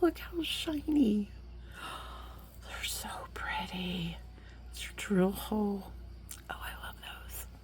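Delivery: breathy, barely voiced, very quiet whisper. Showing off shiny moon beads, whispering. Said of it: "I don't know why I'm whispering now".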